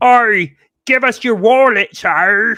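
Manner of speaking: booming, very slow, drawn-out fake Australian accent. Imagining Australian guys holding up the speaker, in a bad Australian accent. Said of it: "That wasn't a good Australian accent".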